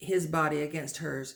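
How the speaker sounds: plain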